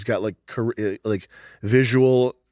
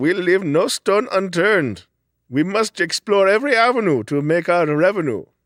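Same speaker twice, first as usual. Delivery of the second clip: mock Indian man voice, higher; 8 semitones higher, 4 dB louder than usual. Acting out what a guy behind dream advertising might say: imitating an Indian guy. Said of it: "an Indian guy is like".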